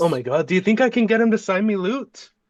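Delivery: eager, gushing excitement. Reacting in character to the news just whispered, as an excited fanboy. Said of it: "Instant like fanboy".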